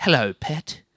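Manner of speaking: unsettling, creepy, too-familiar little delivery. Imitating a mate talking during sex: imitating Angus, creepy. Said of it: "He talks to her like that".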